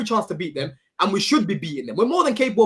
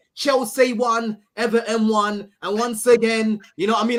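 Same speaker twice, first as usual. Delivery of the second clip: slow, mocking, put-on Cockney accent. Speaker predicts how another speaker will react, imitating Terry's Cockney accent. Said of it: "Is that how Terry sounds?".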